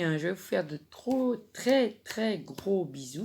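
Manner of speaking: stumbling, fumbling, tripping over the words. Signing off to the friends listening, stumbling over words. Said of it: "je bafouille".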